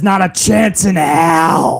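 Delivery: every word drawn out slowly. Reading a viewer's comment aloud: Vince McMahon voice. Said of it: "Had to do that in Vince McMahon's voice".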